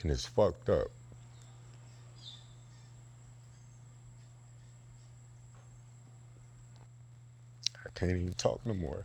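holding back tears. Answering a friend's check-in about his grandmother, holding back tears. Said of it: "I'm trying not to tear up".

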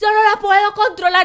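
high, frantic, panicked shout, acted out. Retelling a woman shouting while trying to grab her dog; retelling a shout. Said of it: "Me lo gritaba mientras trataba de agarrar a la perra".

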